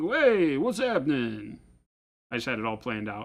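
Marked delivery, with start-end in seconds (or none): 0.0-1.6 swooping, wise-guy tough-guy gangster voice. Imagining the crow he'd train greeting people in his house, in a gangster voice. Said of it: "trained him to talk like a gangster".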